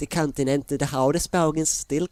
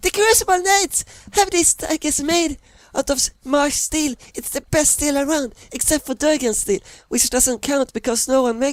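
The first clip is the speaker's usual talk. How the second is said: character voice, much higher pitch, much louder; 12 semitones higher, 4 dB louder than usual. Narrator reading Gordy's line, Gordy's voice rising in pitch and tempo. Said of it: "Gordy's voice suddenly rises in pitch and tempo".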